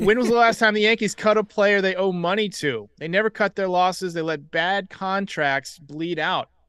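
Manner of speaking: ordinary delivery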